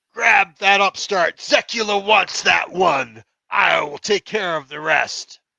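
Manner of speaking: high, rasping, rough-edged villain voice.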